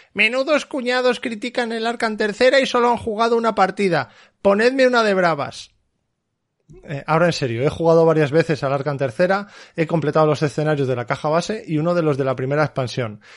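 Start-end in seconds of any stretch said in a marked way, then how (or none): 0.2-5.8 outraged, indignant put-on voice, higher. Reading out a typical indignant social-media comment: mock-indignant commenter voice. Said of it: "Si lo podéis entonar con voz de Indignadito".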